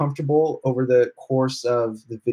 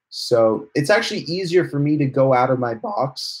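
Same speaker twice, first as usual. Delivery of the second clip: voice cracking partway through. A vlogger talking about himself, when his voice cracks. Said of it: "that was a voice crack".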